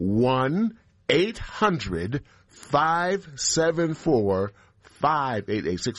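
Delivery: deliberately slowed down. Repeating the support phone number after being told he says it too quickly: slow, deliberate. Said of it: "I'll say the numbers with all deliberate speed".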